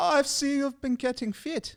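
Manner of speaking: terrible put-on German accent, very high pitch. Imagining what the old German man next door says, in a bad German accent. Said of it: "mine's just as bad".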